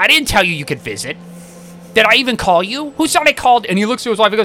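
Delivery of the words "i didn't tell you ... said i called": curt, rude, unwelcoming, hostile dad voice. Retelling visiting his girlfriend's father, the speaker imitates the father: imitating girlfriend's dad. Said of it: "He had the voice!".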